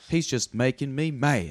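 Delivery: put-on West Virginia accent. Talking about favorite Southern accents, showing how West Virginians talk: West Virginia accent. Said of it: "they talk like this".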